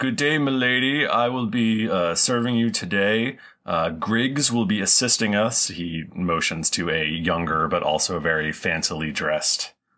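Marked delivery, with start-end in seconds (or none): 0.0-5.7 posh, proper, noble dwarf voice, pitched up. Voicing a dwarf who greets a guest and offers to serve: very proper, noble, fancy dwarf. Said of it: "very proper and noble and fancy dwarf".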